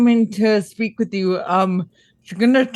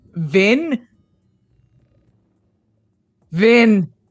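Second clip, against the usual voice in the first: loud shouting voice. Calling down to a teammate who has gone quiet: yelling down to someone. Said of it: "I'm gonna yell".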